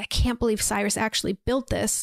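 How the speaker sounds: muttering under the breath. Retelling a scene, quoting a character: imitating muttering under breath. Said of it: "she's kinda saying it under her breath".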